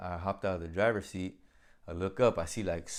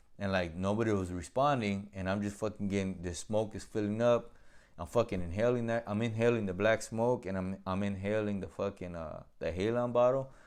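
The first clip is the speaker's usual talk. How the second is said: plain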